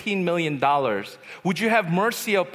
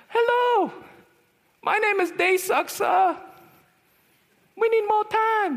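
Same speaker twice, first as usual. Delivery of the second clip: put-on very high squeaky kid voice. Recounting phoning as a kid, pretending to be 45, in a squeaky kid voice. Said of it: "I sounded like Mickey Mouse".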